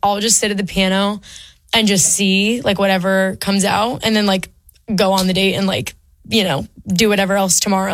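ordinary delivery

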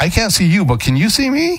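mock sarcastic, very high, swooping sing-song. Retelling their reply to someone who talks past them, retelling a sarcastic retort. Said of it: "I'll meet it with sarcasm".

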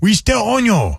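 put-on Chinese accent. Acting out a line from a "we still own you" meeting: put-on Chinese accent. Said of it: "I don't like that we did that accent".

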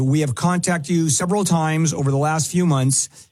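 ordinary delivery

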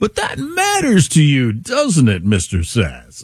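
slow, smug voice with swooping pitch. Mocking an interviewer who is just such an act: imitating Scott Pelley's slow voice. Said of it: "he is just such an act in his slow voice".

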